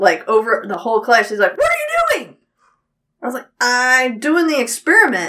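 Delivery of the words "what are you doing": acted, very high, alarmed, freaked-out outburst. Speaker recounting a class experiment, the teacher calling across the whole class, imitating teacher freaking out. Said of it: "my teacher saw me and freaked out".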